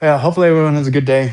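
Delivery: out of breath. Wishing viewers a good day after something heavy, out of breath. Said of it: "I'm just trying to catch my breath".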